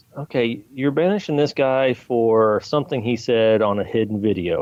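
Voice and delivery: ordinary talk, nothing marked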